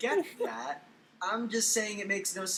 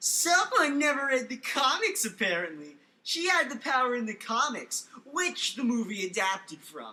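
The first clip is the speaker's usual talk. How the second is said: put-on dumb voice, slow, high, dragged out; 5 semitones higher, 3 dB louder than usual. Reading a commenter's reply aloud in a mocking stupid voice. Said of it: "it's gonna be insultingly stupid".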